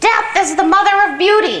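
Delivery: very high, shrill, squawking parrot screech. Telling about a parrot that suddenly shouts, shouting in parrot voice. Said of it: "I'm going to do this in the parrot's voice".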